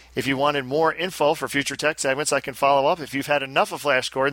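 normal talking voice

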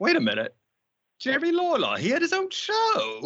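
put-on regal British accent, sing-song, pitch way up. Retelling his wife's reaction to a wrestling clip, imitating his wife as the queen. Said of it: "I like how you imitate her as the queen".

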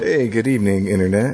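smooth mellow radio DJ delivery. Opening a podcast episode, the host greets listeners like a soft jazz radio DJ. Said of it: "you opened off like you were like a soft jazz radio DJ".

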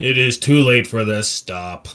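stern, grave, commanding tone. Game master voicing Urkov on his turn, in a booming Urkov voice. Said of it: "In a booming voice".

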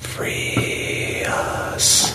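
distant voice, very faint, barely audible. Narrating a horror game, voicing an unseen voice heard very faintly. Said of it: "just very faintly".

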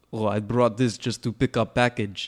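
put-on Russian-accented broken English. The speaker voices a man picking up a package; Russian accent. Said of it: "have to say with the Russian accent now".

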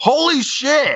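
high-pitched shocked yelp. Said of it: "and I screamed out".

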